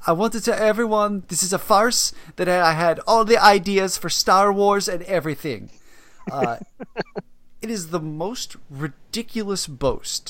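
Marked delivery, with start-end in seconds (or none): 0.1-5.7 fake Swiss accent, pitched high. Speaker quotes Spike Jonze's speech; Spike Jonze in a fake Swiss accent. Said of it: "in a Swiss accent".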